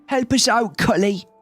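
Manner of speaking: put-on Dorset-like accent. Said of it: "What accent is that? It's like Dorset".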